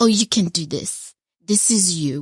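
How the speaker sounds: put-on heavy, strong French accent. Speaker quoting their mother's encouragement, imitating mother's french accent. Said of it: "She has a very French accent".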